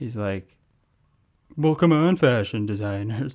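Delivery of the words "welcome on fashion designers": raised, projected, announcing show-host voice. Retelling a parent's impression for the audience: Tim Gunn impression. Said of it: "he does a pretty good Tim Gunn impression".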